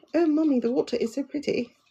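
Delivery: put-on very high, girlish British girl's accent. Recalling a British girl at a Florida parrot jungle talking to her mommy; British girl's accent. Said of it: "A British girl was at this um".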